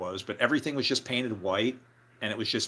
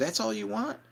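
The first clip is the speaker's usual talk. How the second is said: mock, very high-pitched, baffled, weirded-out disbelief; 11 semitones higher than usual. Retelling a waitress's reaction to a small order: imitating a weirded-out waitress. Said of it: "It was the way she said it".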